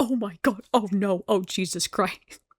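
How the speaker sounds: put-on panicked voice. Retelling a scene where Bocchi reacts: imitating Bocchi panicking. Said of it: "now she's panicking".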